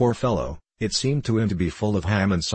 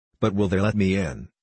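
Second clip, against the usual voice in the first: plain reading voice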